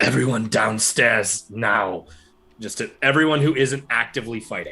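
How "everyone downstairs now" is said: loud, strained whisper, as loud as possible. Voicing a character calling everyone downstairs: whispering as loudly as possible. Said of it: "as loudly as he can in his whi-, whisper of a voice".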